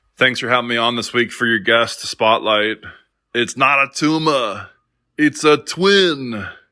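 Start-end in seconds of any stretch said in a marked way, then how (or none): 3.4-6.4 bad put-on voice, high, very slow, twin stretched. Doing a terrible Arnold impression in a guest spotlight message. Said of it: "That is my terrible Arnold impression".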